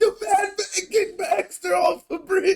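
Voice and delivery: fake announcer voice sobbing. Retelling a movie scene where he calls from a phone booth: imitating Ron Burgundy crying. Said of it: "crying and shit".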